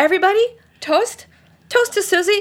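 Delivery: high, loud, mock put-on voice.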